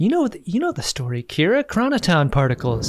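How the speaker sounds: put-on hushed voice. Retelling a scene where characters talk in hushed voices: imitating Dax in a hushed voice. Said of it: "everyone's talking in hushed voices".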